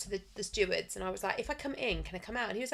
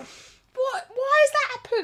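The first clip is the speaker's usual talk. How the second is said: very high, loud, slow crying wail through words; 12 dB louder than usual. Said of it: "I'm actually crying".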